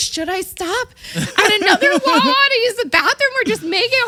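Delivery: put-on panicked screaming. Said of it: "I was screaming".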